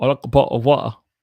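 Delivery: put-on British accent. A speaker practicing the word bottle tries it in a British accent. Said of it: "The British, the British".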